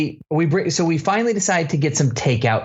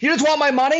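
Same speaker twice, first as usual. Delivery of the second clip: mock very high, shrill scream; 10 semitones higher than usual. Retelling lighting into a kid over money, acting out screaming at him. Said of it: "And so I just started screaming".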